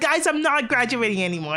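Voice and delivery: acted derisive, sarcastic, ridiculing delivery. Mocking VTubers who call off their graduation: mocking imitation of VTubers. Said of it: "they're like".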